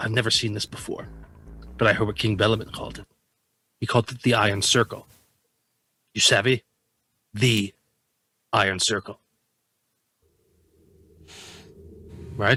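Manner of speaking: loud stage whisper. Answering another player in character after being asked: loud whisper. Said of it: "You just do a loud whisper".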